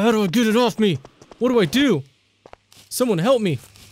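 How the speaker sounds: panicked, panicking voice. Streamer reacting to a spider on their face in the game, panicking. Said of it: "I'm panicking".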